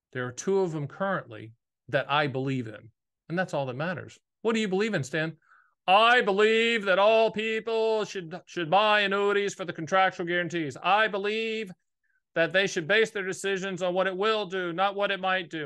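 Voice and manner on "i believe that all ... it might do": pompous, over-intoned bad-politician speech voice. Asked what they believe in, the speaker answers talking like a bad politician. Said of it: "Why am I talking like a bad politician?".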